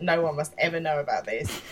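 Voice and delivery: ordinary talk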